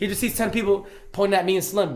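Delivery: plain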